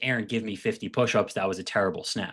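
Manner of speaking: ordinary talk, nothing marked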